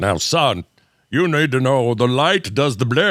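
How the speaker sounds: put-on earnest fatherly dad voice. Retelling a scene where the dad speaks to his son: imitating a dad character. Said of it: "he's just such a dad in this".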